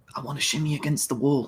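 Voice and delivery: soft, hushed stage half-whisper. Retelling what the character half-whispered to the others: retelling a half-whisper.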